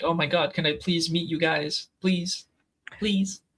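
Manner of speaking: high, gushing, starstruck fan, pleading. Two speakers watch a man; one imitates him as a gushing, begging fan. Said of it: "he's fanning out so hard".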